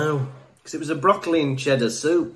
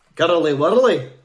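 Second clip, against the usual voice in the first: put-on Edinburgh accent, higher and louder; 4 semitones higher, 7 dB louder than usual. Asked by the other speaker for an accent: Edinburgh accent. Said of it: "Say that in a, a Edinburgh accent".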